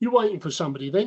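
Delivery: quick, rattled-off comic English policeman voice. Retelling how you questioned a man who was waiting for somebody, in your best John Cleese policeman accent. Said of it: "putting on my best John Cleese policeman accent".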